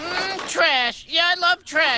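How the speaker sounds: very high, squeaky, loud little creature voice. Voicing a creature who eats trash: garbage goober voice. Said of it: "the garbage goober voice".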